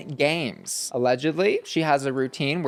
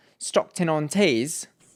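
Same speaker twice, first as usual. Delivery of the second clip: attempted, put-on British accent. Trying to say the place name as if British: put-on British accent. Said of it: "I'm trying to say it like if I was British".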